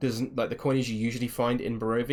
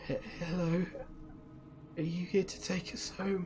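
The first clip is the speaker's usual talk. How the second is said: put-on very raspy, hushed, whispered little-girl voice; 7 semitones higher, 8 dB quieter than usual. Playing a seven-year-old child asking the listener to take her home, very raspy voice. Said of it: "with a very raspy voice".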